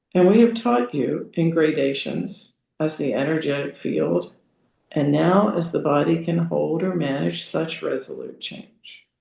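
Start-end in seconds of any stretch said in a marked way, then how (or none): none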